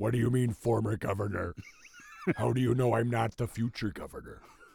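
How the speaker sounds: combative delivery, pushing back hard with swooping pitch. Imitating Jesse Ventura answering an interviewer: Jesse Ventura voice. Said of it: "he'd be like".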